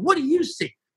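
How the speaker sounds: pushy, confrontational, challenging tone, high-pitched. Retelling own past reply to Harry: retelling a confrontational reply. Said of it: "Now I'm getting really confrontational".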